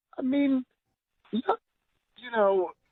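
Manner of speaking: pitch rising very high. Explaining why a date didn't work out, voice going really high. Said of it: "Your voice just went really high".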